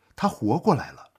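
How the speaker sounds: ordinary delivery, nothing marked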